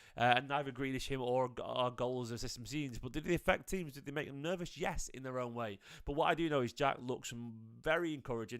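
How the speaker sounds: soft, quiet talk.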